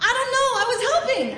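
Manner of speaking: high, fast, laughing delivery.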